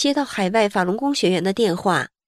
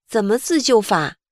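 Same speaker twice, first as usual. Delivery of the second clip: ordinary talk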